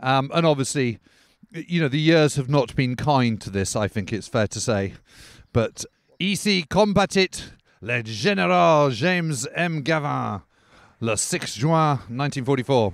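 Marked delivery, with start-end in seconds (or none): 6.2-12.9 put-on French accent. At General Gavin's foxhole, speaking in a put-on French accent. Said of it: "in my best French accent".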